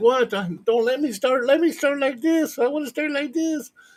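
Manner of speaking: put-on very high, babyish, whiny voice. Retelling a competitor's complaint at the start: imitating whining like a baby. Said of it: "Camille was whining like a baby".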